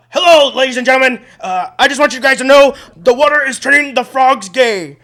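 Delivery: very loud, very high yell at full volume. Doing a practiced impression for a friend: Alex Jones impression. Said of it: "I have an Alex Jones impression".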